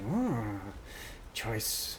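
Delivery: very quiet, low muttering under the breath. A woman in the scene raises a bone sliver as if to taste it: muttering. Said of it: "you hear her sort of muttering".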